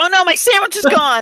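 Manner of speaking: acted panicked character voice. Playing a character in a tabletop game scene: panicked in-character voice. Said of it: "Frankie panics for a minute".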